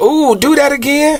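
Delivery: put-on very high, excited, impressed girl's voice.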